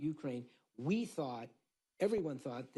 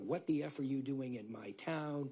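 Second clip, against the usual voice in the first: usual speaking voice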